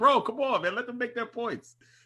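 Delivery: mock high-pitched yell. Retelling yelling at a co-host on mute: imitating own yelling. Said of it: "I'm yelling at him".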